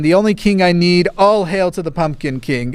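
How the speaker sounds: ordinary talk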